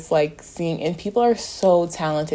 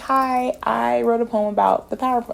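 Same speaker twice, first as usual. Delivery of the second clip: put-on cutesy tone, higher pitch; 7 semitones higher than usual. Retelling getting on stage before reading a poem: imitating own cutesy voice.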